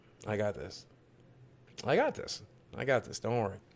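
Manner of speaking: steadied voice fighting off crying, holding back tears. Reassuring the viewers after talking to the dog: holding back tears. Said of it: "I'm not gonna cry".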